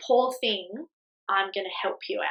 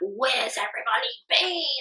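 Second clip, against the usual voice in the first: play-acted raging, furious, angry outburst; 3 semitones higher than usual. Retelling arriving at the hospital room, imitating own raging outburst.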